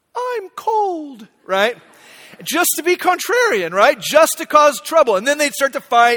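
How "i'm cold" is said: very small, quiet, high squeak, drawn out. Retelling a two-year-old in the back seat of the car: imitating a tiny quiet squeaky voice. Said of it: "really quiet, this tiny little squeak of a voice".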